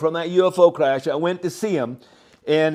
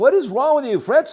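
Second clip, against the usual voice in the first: high-pitched screaming; 7 semitones higher than usual. Recalling a man slamming him against a wall, retelling how he screamed at him. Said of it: "I was screaming at him like".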